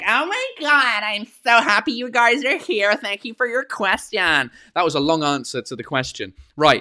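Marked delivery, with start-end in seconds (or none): 0.1-4.5 put-on, pitched-up American accent. Showing how he speaks when in America: imitating an American accent. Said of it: "if I go to America and I speak American".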